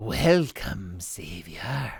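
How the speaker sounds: raspy, rasping, otherworldly eldritch creature voice. Narrating the game, giving the eldritch creature's line in a raspy creature voice. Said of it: "Can I do a raspy voice?".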